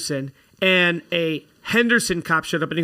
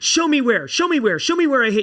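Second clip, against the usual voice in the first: play-acted, high-pitched, demanding screaming; 7 semitones higher than usual. Retelling an argument with another driver after a car accident, imitating a woman screaming. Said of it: "And she's like screaming at".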